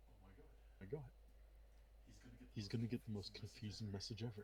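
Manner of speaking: mumbling under breath. Playing a speechless character reacting to shocking news: muttering to himself. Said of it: "he just mutters to himself".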